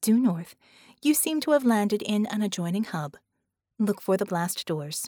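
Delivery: ordinary delivery, nothing marked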